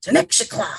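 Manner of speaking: whispered, scolding tone.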